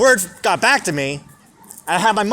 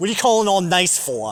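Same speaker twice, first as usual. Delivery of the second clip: put-on New York accent. Retelling what a woman said to him on the phone, imitating a Staten Island accent. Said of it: "That fucking Staten Island accent".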